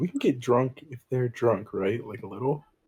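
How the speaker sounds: whispering in character. Leaning in to another player's character, whispering in character. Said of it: "I whisper to Jason again".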